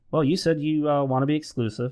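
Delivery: very relaxed, even tone.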